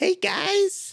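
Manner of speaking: put-on very high five-year-old child voice. Voicing a cursed five-year-old greeting the party: five-year-old child voice. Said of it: "a five-year-old drawing something".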